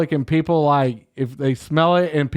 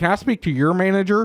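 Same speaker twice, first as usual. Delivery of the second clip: mock entitled tone, higher; 4 semitones higher than usual. Joking about complaining to God at heaven, put-on Karen voice. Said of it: "I will straight up Karen God and be like".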